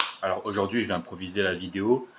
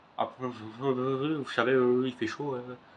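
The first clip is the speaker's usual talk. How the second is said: slow, faltering, hesitant words mumbled into beard; 4 semitones higher than usual. Showing how people often talk instead of speaking clearly: imitating people mumbling hesitantly. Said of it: "les gens, ils parlent comme ça".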